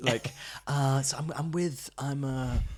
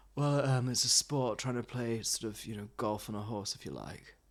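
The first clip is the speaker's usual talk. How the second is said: the flattest, energy-free, dead flat monotone delivery; 3 semitones lower, 6 dB quieter than usual. Quoting the polo instructor describing polo: imitating Tarquin's flat voice. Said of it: "He's giving us the flattest voice you've ever heard".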